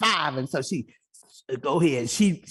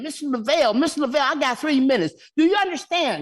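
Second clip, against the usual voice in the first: acted, high, insistent screaming; 10 semitones higher than usual. Retelling interrupting a council member at a meeting: retelling own screaming. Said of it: "I started screaming".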